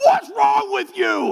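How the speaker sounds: shrill, very high, loud shout. Retelling a bus incident, the speaker voices the bus driver: retelling a yell. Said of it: "he's yelling at me".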